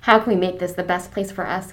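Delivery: ordinary talk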